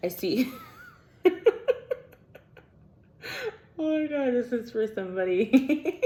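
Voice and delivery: high, slow speech broken up by laughter. Reading cards and finding the message funny, laughing while talking. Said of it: "I'm laughing".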